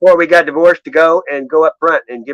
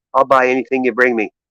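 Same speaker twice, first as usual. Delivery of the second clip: imitated whisper, lower pitch; 3 semitones lower, 3 dB quieter than usual. Retelling what his coworker's dad said at the shop: imitating a whisper.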